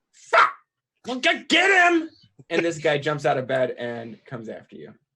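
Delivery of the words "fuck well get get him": very high, very loud, shrill goblin yell. Narrating a scene, the speaker voices an unseen figure's shout: yelling. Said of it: "you hear the voice yell".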